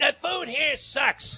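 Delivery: very high screaming, dragged out slowly. Retelling a pampered meal at the racetrack: imitating Hank Goldberg screaming. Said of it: "he would start screaming".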